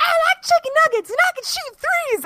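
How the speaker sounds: put-on very high, small child's voice. Describing a short video clip, imitating the little kid in it.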